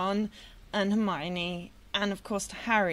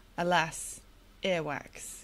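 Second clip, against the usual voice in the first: put-on deadpan delivery; 4 semitones lower than usual. Retelling a favourite book line about a bean: imitating a deadpan delivery. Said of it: "just completely sort of deadpan".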